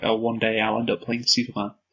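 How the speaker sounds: ordinary talk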